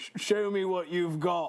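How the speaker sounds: put-on Cockney British accent. Trying a voice for the Colonel's line, Colonel in Cockney British accent. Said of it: "I think I fully transitioned to Cockney British".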